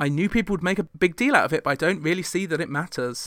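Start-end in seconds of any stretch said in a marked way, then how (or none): none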